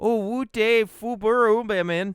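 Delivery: Minnesota-sounding speech. Trying once more to pronounce a phrase right, in a minnesota accent. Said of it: "say it like with a Minnesota accent".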